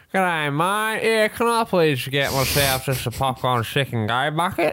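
slow, exaggerated put-on Australian accent. Retelling ordering at a drive-through: put-on Australian accent. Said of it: "just put on the".

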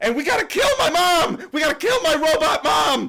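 very high, very loud, piercing shriek. Telling a story during a recorded episode, screaming. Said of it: "you screaming".

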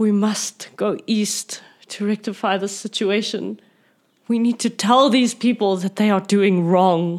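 anguished, angsty, tearful, crying through the words. A character down on one knee pleads to go east, angsty and crying. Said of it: "in a very angsty manner".

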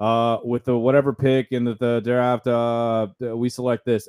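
dry, flat, no-frills, emotionless delivery. Retelling a draft pick announcement with no pomp: imitating Yzerman with no emotion. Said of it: "no pomp, no emotion".

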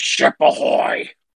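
put-on grunt. Describing a scene from an episode, the speaker quotes Gordon, grunting like Gordon. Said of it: "Gordon kind of grunts".

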